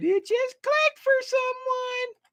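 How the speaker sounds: very high cartoon voice rising into a squeak. Retelling what the speaker said, in a SpongeBob voice. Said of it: "In my SpongeBob voice".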